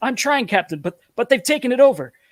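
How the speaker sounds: harried, frazzled, high-pitched voice. Narrating a radio exchange, someone answers the captain that they've lost control: frazzled voice. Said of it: "a frazzled voice responds".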